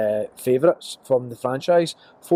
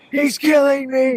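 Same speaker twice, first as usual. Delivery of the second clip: put-on character scream, pitched higher; 14 semitones higher, 4 dB louder than usual. Retelling how Rob screams as he is killed: imitating Rob screaming. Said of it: "he's just screaming".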